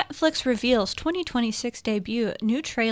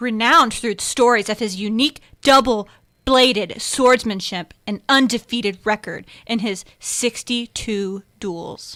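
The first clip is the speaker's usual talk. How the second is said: intense dramatic reading, louder; 6 dB louder than usual. Reading the teleprompter after being asked to: read really intensely. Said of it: "you gotta read it really intensely".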